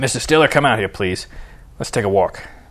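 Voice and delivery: ordinary delivery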